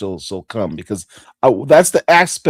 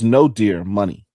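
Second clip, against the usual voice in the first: ordinary talk, nothing marked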